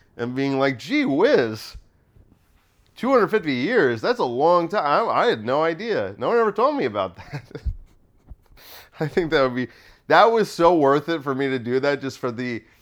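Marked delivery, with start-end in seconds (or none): 0.8-7.5 put-on earnest, naive, innocent amazement. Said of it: "earnestly not knowing".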